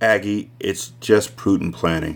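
plain reading voice

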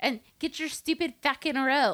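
weird put-on Irish accent. Quoting a Boondock Saints scene about buying rope: weird Irishman accent.

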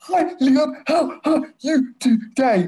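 very high, overdone, exaggerated over-mouthing. Retelling how Harriet would greet someone by miming: imitating Harriet's exaggerated mouthing. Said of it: "Like she was like doing some miming".

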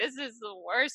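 acted-out crying. Retelling sitting in the hallway after new admits: retelling own crying. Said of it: "crying by myself".

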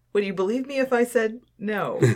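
obvious fibbing tone. Answering, in character, whether she is mapping the group out: lying voice. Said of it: "That's your lying voice".

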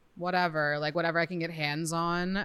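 ordinary talk, nothing marked

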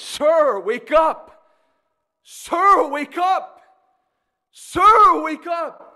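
mock quavering urgent cry, very high, loud, slow, drawn-out. Retelling a woman on a train platform trying to wake a man: imitating a trembling plea. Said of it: "she begins to tremble in her voice".

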